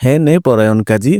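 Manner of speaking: plain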